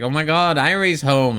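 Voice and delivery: put-on high, childlike little toddler voice. Imagining someone running up to greet a person coming home: imitating a toddler. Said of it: "runs up to her like a toddler and like".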